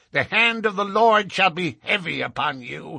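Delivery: very high-pitched crying out. Young Drebber speaks to Ferrier right after Stangerson, cried out. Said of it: "cried young Drebber".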